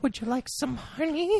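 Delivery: very high, sweet voice with menacing rage underneath. Voicing a murderous Winnie the Pooh offering honey: sweet but rageful Winnie the Pooh voice. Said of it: "in his voice, like, just, so sweet".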